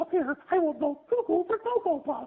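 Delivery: pitched very high and belted out loudly. A voice actor demonstrates the cereal mascot he voices: Sonny the Cuckoo Bird voice. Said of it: "the voice of the Sonny the Cuckoo Bird, who sounds like this".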